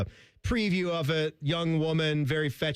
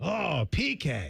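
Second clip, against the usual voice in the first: put-on rough, creaky, raspy cartoon growl. Joking about two tough hockey players as a couple: South Park character voice. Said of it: "Why did you sound like a South Park character right there?".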